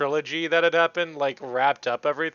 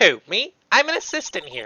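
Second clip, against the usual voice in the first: put-on snooty valley girl voice, swooping pitch; 3 semitones higher than usual. Playing an assistant who helps with props, in a snooty valley girl voice. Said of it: "I'm gonna give her like a snooty valley girl voice".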